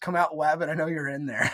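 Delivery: ordinary talk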